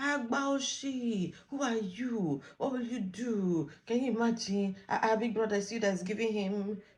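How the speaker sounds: put-on shouting. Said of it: "she was just talking and shouting".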